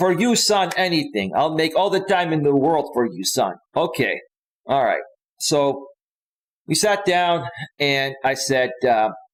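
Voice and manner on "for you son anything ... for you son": put-on heavy, thick Greek accent. Retelling his dad's reply after asking to talk, in a thick Greek accent. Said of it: "With this big, thick Greek accent".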